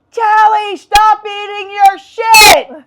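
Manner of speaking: high-pitched, slow, loud screaming.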